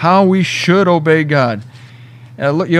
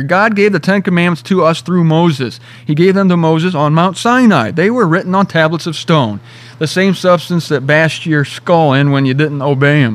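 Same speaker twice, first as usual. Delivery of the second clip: ordinary talk, nothing marked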